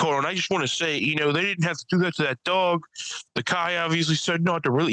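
mock crazed, high-pitched, worked-up rant. The speaker recalls an older comic's sudden rant during his bit; retelling a crazy rant. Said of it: "He's going crazy".

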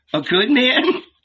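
playful, laughing, teasing, very high. A woman teases the man who has just told her his name, laughing, teasing. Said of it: "Martha laughed, teasing him".

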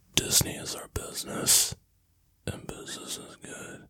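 very soft whisper. Speaking after being asked to keep quiet for a sleeping puppy: whispering softly. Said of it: "That's like A S M R".

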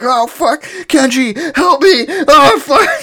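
very high, very slow, loud, drawn-out pained scream. Storyteller acting out a man bitten by zombies, calling to Kenji: retelling a scream. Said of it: "So he's like screaming".

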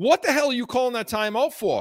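acted-out high, fast screaming yell. Recalling a late-game timeout call while watching at home: retelling screaming at the TV. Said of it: "I start screaming at the TV".

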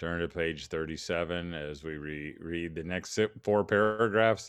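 low, flat, droning monotone teacher voice. Speaker mimics the typical TV-show teacher: droning monotone teacher voice. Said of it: "speaking in some droning monotone voice".

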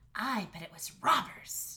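hissing, hissed whisper. A girl speaking to her brother after their parents leave the room, hissed. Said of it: "she hissed".

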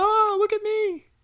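put-on high, slow, giddy little-girl voice.

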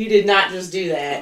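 ordinary delivery

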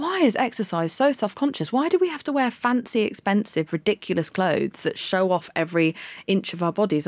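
ordinary talk

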